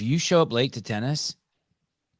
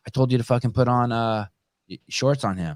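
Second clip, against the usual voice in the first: ordinary talk, nothing marked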